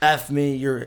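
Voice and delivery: mock screaming. Telling a story about a woman yelling at him, quoting her: retelling her screaming. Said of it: "freaking yelling at me, screaming like".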